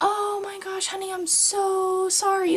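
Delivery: loud, very high sorry with long drawn-out so. Speaker retells her aunt's reply to the bacon question, acting out a loud apology. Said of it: "like loudly".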